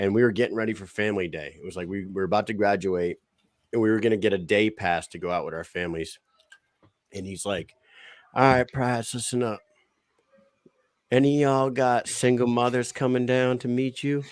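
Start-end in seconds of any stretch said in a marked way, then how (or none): 8.3-14.2 thick Southern drawl, commanding drill-sergeant voice. Retelling what the drill sergeant told the recruits before family day: imitating drill sergeant Wendell's southern accent. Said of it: "had the most southern fucking accent ever".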